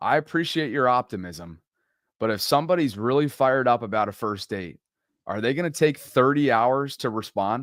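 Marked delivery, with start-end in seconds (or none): none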